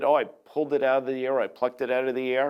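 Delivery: ordinary talk, nothing marked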